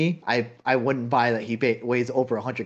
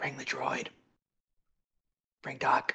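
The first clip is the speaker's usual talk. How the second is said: hushed, theatrical stage whisper meant to carry; 9 dB quieter than usual. Voicing a character in a game, calling for the droid: stage whisper. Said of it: "I'll stage whisper".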